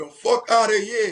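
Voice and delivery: put-on heavy Jamaican accent, laid on hard, high and loud. Retelling what Lily said to Derek, in Lily's hard Jamaican accent. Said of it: "with a hard Jamaican accent".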